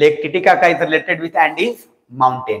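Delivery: very slow, word-by-word dictation. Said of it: "मैं चाहूंगा कि एक लाइन यहीं पे आप लिख लें".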